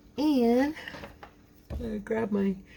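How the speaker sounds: mid-yawn speech. Talking to viewers while preparing twine in a video, yawning. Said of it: "sorry about that, I'm yawning".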